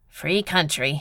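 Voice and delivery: grumbling mutter. Narrator voices a man who shrugs unhappily and answers: muttered unhappily. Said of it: "he muttered".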